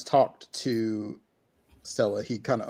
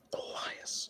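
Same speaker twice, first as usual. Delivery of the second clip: panicked muttering under the breath, quieter. Playing a character who sees a darkness rising: under the breath, in a panic. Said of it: "I almost say it under my breath".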